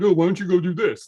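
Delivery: glib, lofty, superior-sounding tone. Praising how the guest's voice changed, the speaker mimics a crappy advice-person voice. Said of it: "crappy thirty thousand foot advice person voice".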